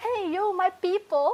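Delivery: attempted South American accent, loud, very high. Asked to try the accent, speaker recalls what people there would say, in a not-authentic South American accent. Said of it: "Can you do like South American accent right now?".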